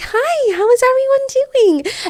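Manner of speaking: very high, welcoming customer-service voice. Recalling how the speaker greets everyone on walking in, customer service voice. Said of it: "the customer service voice".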